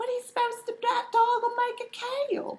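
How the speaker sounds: giggly, tittering, very high pitch. A narrator voices Snapdragon, a flower, asking the others about a dog, giggling.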